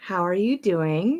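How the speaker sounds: grade-schooler tone. Asking another speaker how they are doing, in a fourth grady tone. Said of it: "Why'd you get all fourth grady on me?".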